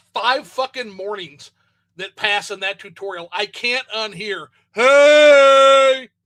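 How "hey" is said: booming, loud, high-pitched, stretched-out voice. Complaining about a game tutorial, imitating the character who wakes him each morning. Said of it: "I can't unhear that stupid motherfucker wake me up".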